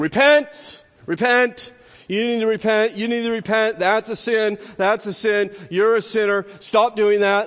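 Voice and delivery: high, loud preacher-style shout.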